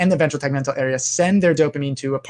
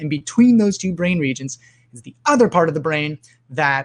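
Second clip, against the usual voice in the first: ordinary talk, nothing marked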